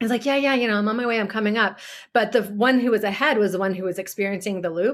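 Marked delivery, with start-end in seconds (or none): 0.2-1.8 put-on freaked-out, shaking, trembling scared voice. Retelling a brother's reply called back on a dark road: imitating a freaked-out shaking voice. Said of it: "sounding like he's totally freaked out, his voice shaking".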